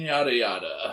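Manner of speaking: ordinary talk, nothing marked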